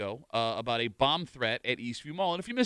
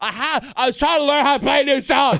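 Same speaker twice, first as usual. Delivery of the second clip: very high, very loud put-on British accent; 13 semitones higher, 13 dB louder than usual. Retelling what she said when she interrupted his nap, imitating her in a british accent. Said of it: "She's become British for some reason".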